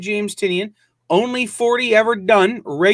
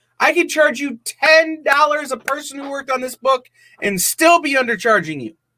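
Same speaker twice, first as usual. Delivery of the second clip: heated, worked-up rant, pitch climbing high; 5 semitones higher than usual. Pitching a one-shot comic book and its price, yelling. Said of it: "Did I did I start yelling?".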